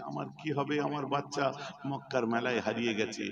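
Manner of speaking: usual speaking voice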